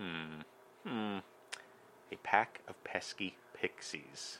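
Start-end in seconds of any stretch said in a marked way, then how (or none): 2.1-4.4 very slow, careful, breathy near-whisper. Trying a tongue twister for the first time: saying it slowly. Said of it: "you can say it slowly".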